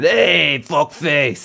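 put-on old-school sixties Brooklyn accent. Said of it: "doctors from Brooklyn".

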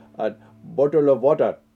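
put-on English accent.

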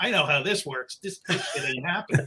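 put-on eye-rolling, skeptical, dismissive scoff. Recalling hearing about a long-delayed movie finally being made: retelling an eye-rolling scoff. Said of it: "I'm just rolling my eyes".

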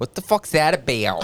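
put-on rough Philadelphia accent, somewhat butchered. Re-enacting how she said it to friends, in a put-on philly accent. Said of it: "That sounds like a Philly accent".

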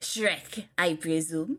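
fake French-accented voice. Acting a scene, a character greets another character, French accent. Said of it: "saying Shrek in a French accent".

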